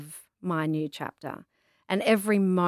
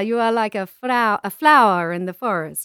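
bad put-on Spanish accent, louder, slower; 3 semitones higher, 8 dB louder than usual. Retelling what a man at a food truck said to the speaker, in a terrible Spanish accent. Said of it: "I have a terrible Spanish accent".

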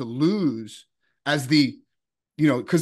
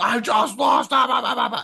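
high, rough, upset yelling outburst; 8 semitones higher than usual. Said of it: "he starts, like, yelling".

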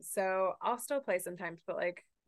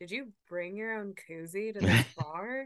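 put-on judgmental voice; 3 dB louder than usual. Retelling what a stranger behind them at a bar said, mimicking a judgmental voice. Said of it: "who is this judgmental voice?".

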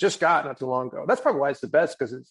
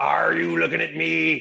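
gruff, rough, creaky pirate voice; 3 semitones higher than usual. Retelling an audition where every impression was done as a pirate: retelling a pirate voice. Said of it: "I'm doing them all as pirates".

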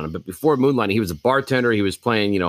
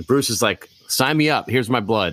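normal talking voice

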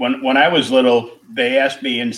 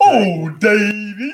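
very high put-on comic character voice; 9 semitones higher, 3 dB louder than usual. Recalling a childhood impression, calling out a name in Goliath voice. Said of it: "I used to do a pretty good Goliath impression. I got the voice down".

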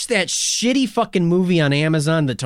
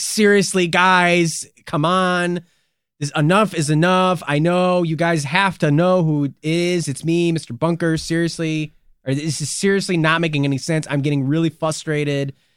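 ordinary talk

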